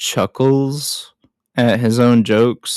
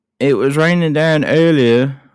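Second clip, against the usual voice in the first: bad put-on Australian accent, mostly drifting British; 4 semitones higher than usual. Quoting a movie character's line, in a bad Australian accent that sounds British. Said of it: "that was British more than Australian".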